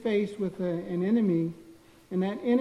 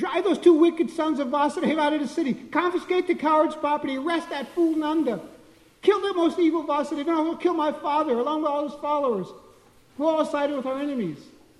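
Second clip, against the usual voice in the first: frightened, rushed, loud, high-pitched speech; 8 semitones higher, 4 dB louder than usual. Reading a scripture text aloud, imagining how Kamsa spoke it: Kamsa speaking very quickly. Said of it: "he began speaking very quickly".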